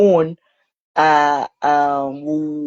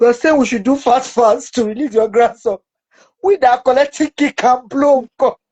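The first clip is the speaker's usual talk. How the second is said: loud, angry voice. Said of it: "she go angry and says".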